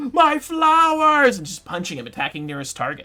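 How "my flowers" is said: confused, loud, high-pitched shrieking. Voicing a confused noble screaming at a character: confused noble screaming. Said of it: "The confused noble is now just screaming at him".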